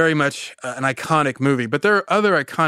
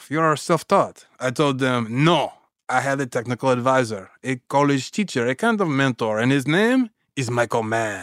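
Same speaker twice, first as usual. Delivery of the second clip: fake French accent held throughout. Recounting a story about a mentor, naming him in a put-on French accent. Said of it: "Forgive my French accent".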